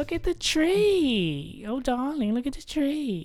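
very high, swooping, slow sing-song, tree stretched out. Doing a bad impression of Linda Belcher: Linda Belcher voice. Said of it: "who does Linda Belcher's voice".

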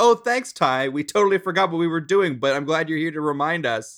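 put-on very sincere, bright, earnest, upbeat tone. Recapping a scene where Tai yells at the lagging guys; imitating TK, earnest and upbeat. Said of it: "in a very earnest, very like upbeat tone says".

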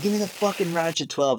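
put-on, high, screamed yelling. Retelling an argument with the speaker's dad during a slow repair, retelling a yell. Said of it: "And we're screaming".

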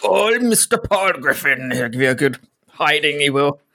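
put-on salty pirate-style voice. Imagining what the children would say, a speaker puts on a pirate voice. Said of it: "It's like a pirate voice there".

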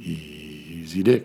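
low, deep, drawn-out delivery. Showing how the phrase has to be said, the speaker uses a low voice. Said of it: "You have to say it low".

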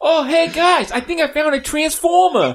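Boston accent, pitched very high. Asked about the accent, the speaker repeats the line in a Mark Wahlberg accent. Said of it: "That's my Mark Wahlberg accent".

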